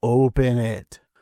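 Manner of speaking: put-on spooky acted old man voice. Retelling how Abe offers the box to Bart: eerie Abe voice. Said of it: "saying in an eerie tone".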